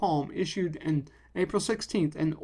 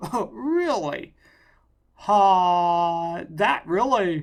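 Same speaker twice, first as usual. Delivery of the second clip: sarcastic put-on amazement, lifted, dripping sarcasm; 6 dB louder than usual. Reacting to a news headline just read aloud: sarcastic. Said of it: "I'm being sarcastic".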